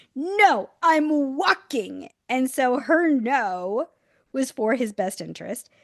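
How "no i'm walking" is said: put-on high, cross, angry three-year-old voice. Retelling a barefoot three-year-old refusing his shoes, imitating an angry toddler. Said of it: "he was pissed".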